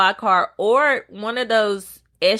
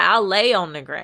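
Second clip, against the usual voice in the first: normal talking voice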